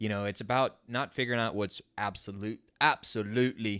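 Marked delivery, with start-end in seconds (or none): 2.8-3.8 "absolutely" said in a light put-on British accent. Talking to audio-only listeners, the speaker says one word in a put-on British accent. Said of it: "got to be said in a British accent".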